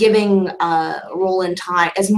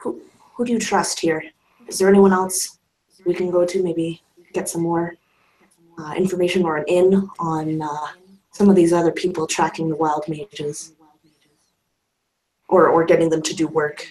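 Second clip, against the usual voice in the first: speaking quieter, hushed and secretive. A storyteller voices a woman who leans in to ask the listener something, speaking a bit quieter. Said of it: "she would actually start speaking a bit quieter".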